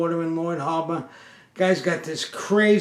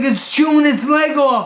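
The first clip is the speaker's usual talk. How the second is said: frantic, hysterical, sobbing, crying scream; 9 semitones higher, 8 dB louder than usual. Retelling a 2 a.m. phone call about a rat, imitating hysterical screaming and crying. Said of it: "He's screaming, he's crying".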